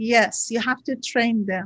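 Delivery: put-on serious tone. Retelling something funny a woman once said, retelling a very serious remark. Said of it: "She was very serious".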